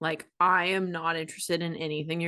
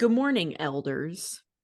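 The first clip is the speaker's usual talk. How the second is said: put-on stern tone in a lowered register. Retelling own greeting to missionaries: imitating own stern greeting.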